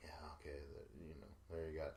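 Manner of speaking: listless, very quiet, flat, unenthusiastic low drone. Complaining about TJ's lack of oomph, imitating TJ's flat delivery. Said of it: "put some oomph into whatever it is".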